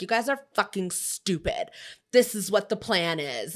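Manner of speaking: bossy, ordering tone. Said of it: "tries throwing her weight around".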